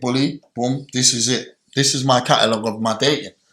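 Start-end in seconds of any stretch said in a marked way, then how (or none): none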